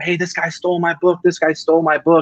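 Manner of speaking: put-on, high-pitched yelling and shouting. Retelling how dad followed a book thief: imitating someone yelling. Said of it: "he's yelling at him".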